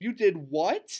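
stuttering out the words. A woman reacts on hearing a child gave away all his quills, stammering. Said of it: "stammered Mrs".

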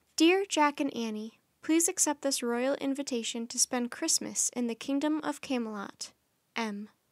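plain reading voice

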